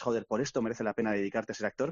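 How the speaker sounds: ordinary talk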